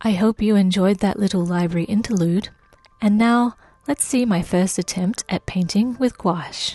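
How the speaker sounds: calming ASMR voiceover in Australian accent. Channel host returns to narrating the video, in a calming asmr australian voiceover voice. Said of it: "my calming A S M R Australian voiceover voice".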